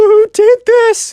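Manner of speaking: fake teary, raging whimper. Retelling a kid's shocked question after his build was blown up: imitating a crying, whimpery voice. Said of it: "kind of like a crying, whimpery voice".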